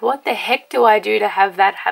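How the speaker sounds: ordinary delivery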